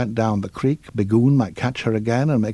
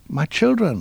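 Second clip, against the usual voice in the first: proud, pleased, pitched-up voice; 5 semitones higher than usual. A mother duck answers her friends' shrieked question, proudly. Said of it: "she said proudly".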